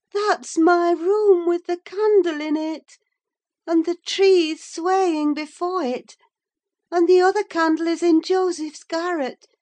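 eager, excited calling out. Insisting she can see the distant lights, she cries out eagerly. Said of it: "she cried eagerly".

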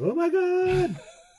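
piercing, very high-pitched scream of horror. Voicing a character who has lost his mind: screaming in horror. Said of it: "he's screaming".

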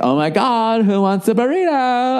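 put-on young-woman voice, high-pitched and slow.

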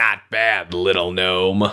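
very low, deep, sneering brute voice. Game master voicing a half-orc at the card table, sneering at a gnome. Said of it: "The half-orc sneers".

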